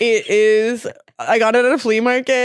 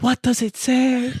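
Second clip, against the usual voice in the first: put-on French-accented security guard voice. Retelling an airport bag search, imitating a French security guard. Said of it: "He goes".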